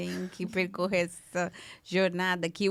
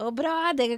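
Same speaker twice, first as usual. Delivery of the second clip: put-on Rio carioca accent, pitched up; 7 semitones higher than usual. Enjoying how the Brazilian voice option talks, doing a carioca accent. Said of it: "o sotaque carioca lá".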